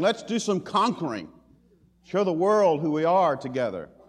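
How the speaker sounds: loud put-on voice crying out. Voicing Peter as heard in the mind, urging conquest: Peter crying out. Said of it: "I can hear Peter's voice crying".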